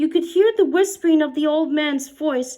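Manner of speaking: ordinary delivery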